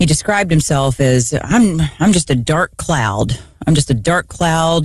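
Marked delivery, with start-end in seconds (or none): none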